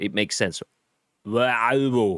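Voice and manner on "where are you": put-on voice, said with tongue stuck out. Teaching a tongue-out trick: Arnold Schwarzenegger voice, tongue out. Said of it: "stick your tongue out and say, "Where are you?" Keep your tongue stuck out. ... There you go. Arnold Schwarzenegger".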